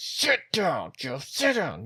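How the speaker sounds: very slow, high, drawn-out whisper shout. Retelling urging someone far away to sit down, retelling a whisper-yell. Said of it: "I'm whisper yelling at him".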